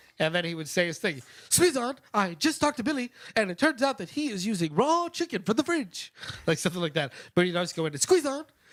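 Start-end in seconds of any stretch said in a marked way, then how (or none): 1.5-6.1 put-on strong Japanese accent, pitched high. Retelling how someone interrupted the announcers, the speaker does a japanese accent. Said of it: "it would be very Japanese".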